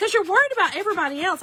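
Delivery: acted, loudly blurted out. Retelling a moment at the checkout, imitating the man who said it loudly. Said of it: "And he said it loudly".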